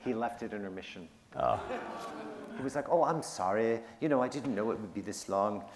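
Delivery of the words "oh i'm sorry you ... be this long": terrible, bad put-on Australian accent. Quoting the hoped-for money guy leaving at intermission: terrible Australian accent. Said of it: "I have a terrible Australian accent".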